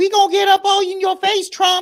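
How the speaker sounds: shrill, very high, full-volume screaming. Retelling a representative's threat at Trump: imitating Crockett screaming. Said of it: "She's screaming like".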